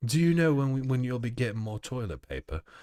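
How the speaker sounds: put-on English accent. Redoing a quoted question to a shop worker: english accent. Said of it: "I need to do an English an, an English accent".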